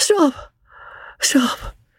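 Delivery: weak, feeble, very high-pitched cry. A voice calls out from the straw of a carriage near a hotel, a feeble cry. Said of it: "A feeble voice cried from the straw".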